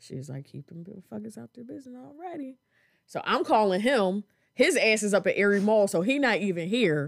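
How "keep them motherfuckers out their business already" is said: hushed, very quiet half-whisper under the breath. Retelling what a sister said while others asked questions: imitating a half-whisper. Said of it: "and she's whispering".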